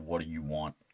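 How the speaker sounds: low, deep, soft grown man's voice. Retelling what a sleeping little sister said to her father: imitating a deep man's voice. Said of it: "in a deep man's voice looked at him and said".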